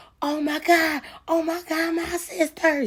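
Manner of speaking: acted, very high, slow sobbing scream. Retelling what she heard a woman screaming from thirty feet away: imitating screaming and crying. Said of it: "She was like screaming and crying".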